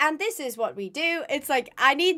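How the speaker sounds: plain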